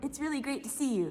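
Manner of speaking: ordinary delivery, nothing marked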